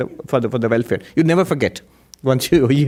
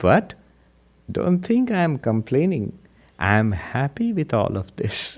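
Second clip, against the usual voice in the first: gentle, unhurried, sweet, slow, soft voice; 5 dB quieter than usual. Retelling what a man said while everyone laughed, in a sweet, slow voice. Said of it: "this sweet voice, you know, slow voice".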